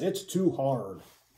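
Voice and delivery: fed-up, disgusted, muttered under the breath. Speaker showing the audience how to say it, in a disgusted voice. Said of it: "with a disgusted voice".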